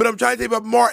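high, fast, creaky pleading.

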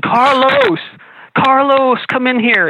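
play-acted very high, long, drawn-out yell. Retelling how a woman in a kitchen called her partner: imitating a woman yelling. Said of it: "she's yelling".

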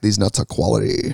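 put-on deep baritone voice. Joking with the others about Latrice selling nuts on TV, in Latrice's deep baritone voice. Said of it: "in her deep baritone voice".

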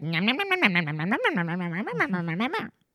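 put-on impression, chomping while speaking.

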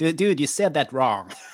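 put-on nerdy American voice. Mocking a nerd on the sidelines correcting an actor, Comic Book Guy nerd voice. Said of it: "when you have a nerd voice, you like lose your accent".

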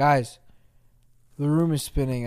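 intoxicated-sounding. A podcast host who has been drinking, talking to co-hosts, drunk. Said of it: "I'm so drunk".

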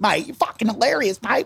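put-on Australian accent, easygoing. Retelling what the Aussie head of the Volcom team said after the set, in an Australian accent. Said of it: "He was an Aussie guy".

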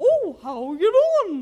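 high, loud, swooping, sing-song cartoon voice. Imitating the cadence of a voice that sounds like Mickey Mouse. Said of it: "Every time I hear that kind of cadence".

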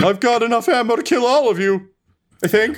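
squeaky, high-pitched voice. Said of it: "he begins to back up, and he's like".

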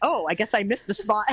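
ordinary delivery

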